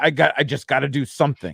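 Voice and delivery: ordinary delivery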